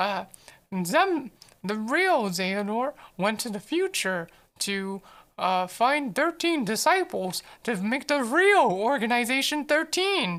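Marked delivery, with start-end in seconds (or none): 1.6-10.4 cartoon mouse character voice. Explaining Xehanort's plan, the speaker delivers it in a mouse voice. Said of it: "that's why I make you Mouse voice".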